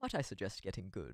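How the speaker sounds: low, soft, proper British accent. A VTuber shows an impression they used to do well: Sebastian voice. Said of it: "I used to be able to do like a Sebastian really well".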